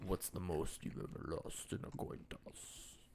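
hushed, breathy, whispered, menacing villain voice. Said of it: "not too bad of a Sugar, uh, impersonation".

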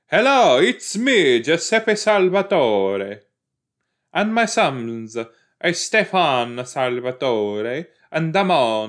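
put-on Italian accent.

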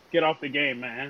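ordinary delivery

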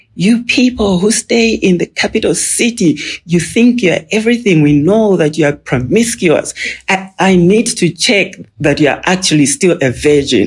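mock half-shouted accusing rant, high-pitched, mildly yelled. Recounting a drunk man who came in, the speaker retells his scream. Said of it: "he was screaming".

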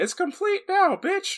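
very high, squeaky mouse voice. Narrating Sora coming over to the gang, voicing him Mickey Mouse-ish. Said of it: "you made him sound Mickey Mouse-ish".

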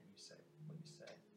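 low, quick, fast whisper.

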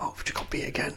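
soft whispered grumbling. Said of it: "Let's stop whispering to me".

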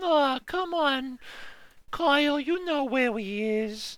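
put-on high, drawn-out child voice. Discussing a movie, imitating the kid character's lines: stereotypical little kid voice. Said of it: "the stereotypical little kid voice".

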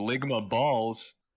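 sudden, pouncing loud shout. Retelling how Frakes broke in on a take: imitating Frakes shouting. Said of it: "he just shouts".

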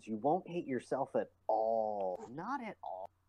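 dry, heavy sarcasm throughout. Joking to friends about playing League of Legends: sarcastic tone. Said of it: "the sarcasm is strong with you".

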